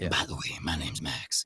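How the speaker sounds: narrator voice with rasp. Showing how the narrator Max from Heart to Heart talked: Max voice. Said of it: "And he talked like this".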